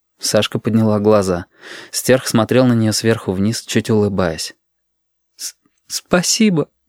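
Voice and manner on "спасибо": halting, stuttering, stammering, pitched higher. Looking up at the man smiling down at her, stammering. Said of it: "проговорила она, заикаясь".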